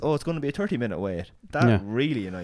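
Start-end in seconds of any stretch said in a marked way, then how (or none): 0.0-1.3 put-on Boardsmill accent. Retelling what a restaurant girl said: imitating a waitress's Boardsmill accent. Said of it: "the accent you have there is flawless".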